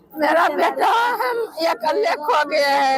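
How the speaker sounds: crying, high wailing call.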